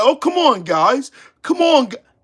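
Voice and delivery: high, pleading, protesting voice, cut off mid-word. Mocking a man who was told to leave a bar: mocking imitation of him protesting. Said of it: "He was like".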